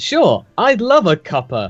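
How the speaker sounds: cheery, bright chirp, unhurried. Answering the dean's offer of tea in character: chirpy. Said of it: "I just chirp out".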